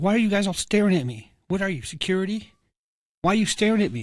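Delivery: high, mad, accusing angry rant. Retelling a shopper who freaks out at staring employees: imitating a woman getting mad. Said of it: "She's getting all mad".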